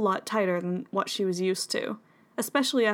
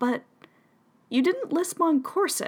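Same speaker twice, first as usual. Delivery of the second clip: wary, doubting, suspicious voice with raised pitch; 8 semitones higher than usual. Narrator reads one character questioning another, suspicious. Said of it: "Polly said suspiciously".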